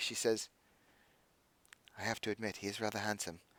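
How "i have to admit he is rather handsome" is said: very quiet, soft, hushed half-whisper. Retelling what a woman said as she leaned in for a hug, half-whispering quietly. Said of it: "she kind of whispers quietly".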